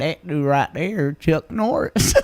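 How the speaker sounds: broadest put-on southern accent, slow, thick drawl. Retelling what a man said about a caricature: imitating a strong southern accent. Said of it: "the most southern accent I ever heard".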